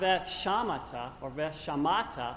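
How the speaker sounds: veshamata, stress moved off ending to earlier syllables.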